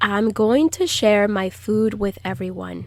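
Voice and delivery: ordinary talk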